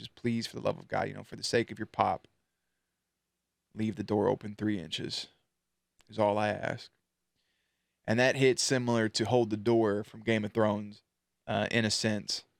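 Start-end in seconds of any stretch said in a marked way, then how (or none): 0.0-6.9 put-on somber, solemn reading voice. Recounting a father's note to his child from a show, imitating David Harbour's somber voice. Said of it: "reading in that somber voice".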